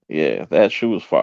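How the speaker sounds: usual speaking voice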